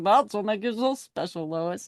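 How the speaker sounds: corny, cheesy sweet-talking hero delivery laid on thick. Retelling how a hero delivers a line to Lois: imitating Superman's cheesy line reading. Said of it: "the way he says it is like".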